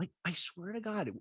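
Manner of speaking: ordinary talk, nothing marked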